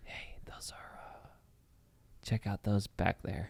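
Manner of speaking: very quiet, barely audible whisper. Retelling whispering to a friend sitting next to them: retelling a whisper. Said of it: "I whispered to my friend next to me".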